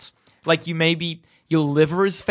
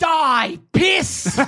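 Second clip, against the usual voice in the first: very high, piercing, shrill screech; 10 semitones higher than usual. Repeating the line Moroni screeches at you, screeching. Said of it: "He screeches at you".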